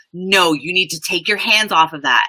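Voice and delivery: put-on upset, scolding tone. Retelling own words when scolding a two-year-old: imitating an upset parent. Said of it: "I'll get upset".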